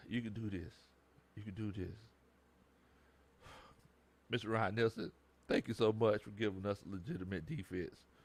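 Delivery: choked up and teary. Dedicating this to a coach, choked up and teary. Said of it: "I'm getting kind of teary eyed".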